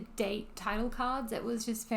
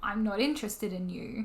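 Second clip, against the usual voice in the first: normal talking voice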